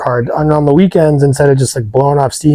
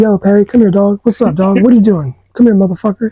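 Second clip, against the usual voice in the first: light, easygoing, relaxed voice, pitched up high; 7 semitones higher than usual. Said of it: "but just super soft spoken".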